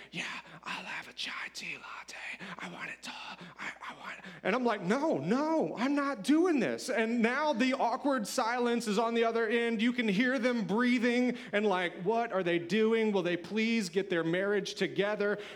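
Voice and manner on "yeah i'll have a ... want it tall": barely audible, very quiet whisper. Retelling a woman's order, the speaker imitates her whisper. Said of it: "And so she just whispers".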